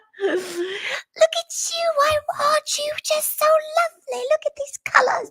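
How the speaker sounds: very high-pitched, doting little witch voice. Retelling staying in character for an hour and a half, speaker uses a little witch voice. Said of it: "I'm doing one of my voices now".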